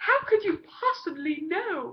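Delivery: botched, failed put-on English accent. Retelling a scene, voicing a character's reply in a failed english accent. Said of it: "my failure attempt at an English accent".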